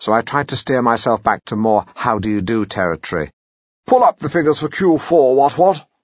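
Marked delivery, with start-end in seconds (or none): 3.9-5.8 put-on overdone, loud, high, too-posh upper-class accent. Retelling trying to sound businesslike at work, in a very posh accent. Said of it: "now I'd become too posh".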